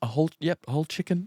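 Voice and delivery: acted polite, unimposing tone. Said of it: "real polite and stuff".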